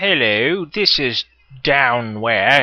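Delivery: goofy, silly, slow, put-on stupid voice. Greeting his audience at the start, in a stupid voice. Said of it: "I'm talking in such a stupid voice".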